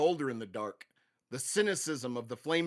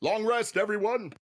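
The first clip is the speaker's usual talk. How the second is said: ordinary talk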